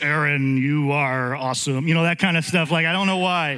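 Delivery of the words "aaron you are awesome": deep voice, speaking slowly and drawn out. Describing how he always pictured God, the speaker voices God; deep God voice. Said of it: "a deep voice".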